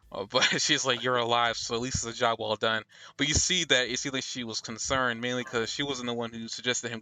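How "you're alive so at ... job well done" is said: ordinary delivery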